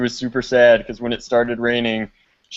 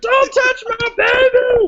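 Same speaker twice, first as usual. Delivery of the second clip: very high, eerie, creepy shriek; 4 dB louder than usual. Retelling a zombie game where she screamed at him, imitating her creepy scream. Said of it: "screaming at him in a creepy voice".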